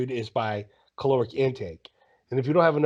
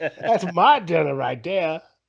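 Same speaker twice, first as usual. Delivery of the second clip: put-on Southern hillbilly voice, higher, louder; 5 semitones higher, 4 dB louder than usual. Joining a friend's imagined scene, speaker is imitating a Southern hillbilly. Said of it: "and the hillbilly's like".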